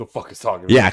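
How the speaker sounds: loud, freaked-out, alarmed, panicked outburst. Retelling an anime scene where a character hears a voice: imitating someone freaking out. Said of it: "Homie's freaking out".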